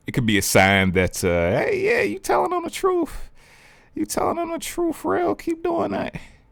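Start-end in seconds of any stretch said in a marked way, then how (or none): 1.5-6.1 very high, squeaky voice. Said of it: "that was my high-pitched universe voice".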